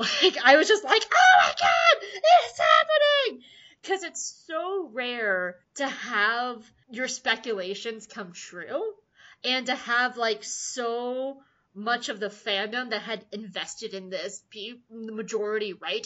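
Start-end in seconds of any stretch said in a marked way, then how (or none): 1.0-3.4 loud, very high shrieking scream. Recalling watching Stan's brother come out of the portal, retelling own scream. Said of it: "And I started screaming".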